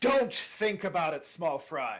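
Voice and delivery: restrained, mild bellowing. A game narrator voices the Sphinx speaking to the players: bellowing Sphinx voice. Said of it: "The Sphinx bellows out".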